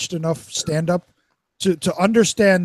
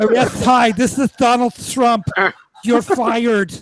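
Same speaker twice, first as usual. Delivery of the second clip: put-on lisping voice; 5 semitones higher, 4 dB louder than usual. Showing off one of a thousand voices: lisping Donald Trump impression. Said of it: "His Trump sounded like a deaf person trying to talk regular with a lisp".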